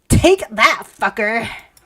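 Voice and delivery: put-on gremlin character voice. Narrating a fight, voicing the main character's taunt in a gremlin voice. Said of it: "The perfect gremlin voice".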